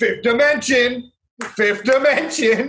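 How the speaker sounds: high, slow voice, each word drawn out. Joking about a talent show, imitating Terry Crews. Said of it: "And Terry Crews is like".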